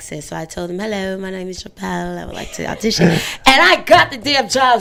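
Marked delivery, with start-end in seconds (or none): 0.8-3.1 quick, put-on English accent. Speaker retells auditioning on a friend's $50 bet; fake English accent. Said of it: "do an audition with the England accent".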